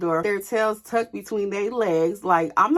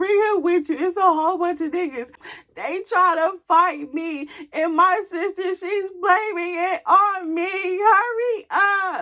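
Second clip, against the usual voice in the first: pitched way up, crying, tearful pleading tone; 10 semitones higher than usual. Retelling calling a father for help: imitating own crying plea. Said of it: "I'm crying".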